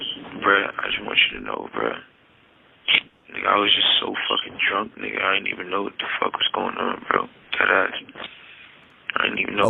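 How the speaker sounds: indistinct, mumbled, muttered words. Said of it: "mumbling on the jail call".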